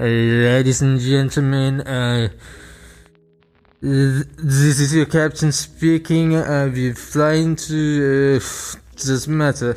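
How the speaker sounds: put-on drunk pilot-style announcement. Imagining a drunk pilot's cabin announcement: imitating a drunk pilot. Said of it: "your pilot goes like".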